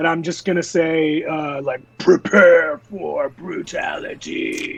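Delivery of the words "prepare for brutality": amplified, thundering, magically booming loud voice. A player's character casts a spell to boom the voice before battle, booming voice. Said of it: "It booms my voice out really loud".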